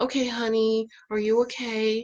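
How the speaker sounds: very monotone, flat and level delivery. Imitating the husband's way of talking, in a flat monotone. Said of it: "he talks to me in a very monotone".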